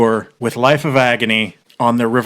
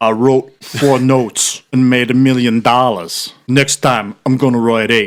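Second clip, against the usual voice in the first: put-on heavy, clumsy, butchered New York accent. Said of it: "in his New York accent that I'm going to butcher".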